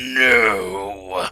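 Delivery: venomous, drawn-out no. Imitating how someone says no, voice like a dagger: mock-venomous no. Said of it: "A lot more venom, but that's about how deep it is. Just like".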